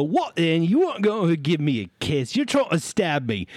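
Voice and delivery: put-on voice of a large looming creature. Voicing a very large creature speaking to a fallen character: Griselda voice. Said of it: "And she'll go".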